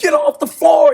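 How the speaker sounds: mock, very high, loud, shrill yell. Retelling the other team's coach shouting at a player: imitating a coach yelling loudly. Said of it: "He's yelling really loud".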